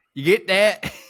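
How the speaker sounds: put-on Southern accent. Retelling a bit done with a spouse: southern accent. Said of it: "and then a Southern accent".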